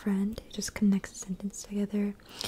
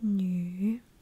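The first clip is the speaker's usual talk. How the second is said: 女 said with a falling then rising tone. Explaining pinyin tones, saying 女 very clearly: dip then rise on 女. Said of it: "very clear, just goes down and up".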